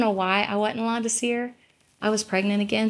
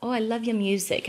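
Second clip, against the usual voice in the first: put-on British accent. Retelling what a fan said to them: imitating a British accent. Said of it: "really cool, like, British accent".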